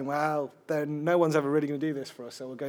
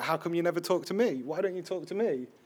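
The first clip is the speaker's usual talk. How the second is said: mock light yell, mildly half-shouted; 3 semitones higher than usual. Retelling how a lad in a block of flats called out: imitating someone shouting. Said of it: "he just started shouting".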